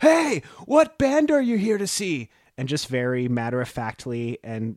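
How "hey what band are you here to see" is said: put-on yelling shout, higher and louder. Retelling the drummer calling out a van window: imitating someone yelling. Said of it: "yells at this queue of people".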